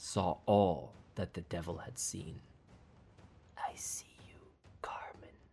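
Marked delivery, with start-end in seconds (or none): 3.6-5.3 very soft, hushed whisper, barely audible. Facing a massive devil, she whispers to it: whispered. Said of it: "she whispered".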